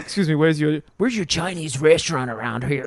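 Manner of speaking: weird put-on pirate voice. Joking about Tom Hardy going village to village, Tom Hardy weird pirate voice. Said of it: "With his weird pirate voice".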